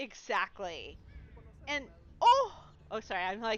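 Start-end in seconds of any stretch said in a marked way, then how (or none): 1.7-2.5 sudden, high, loud, excited shriek on "oh". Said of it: "screaming into the microphone".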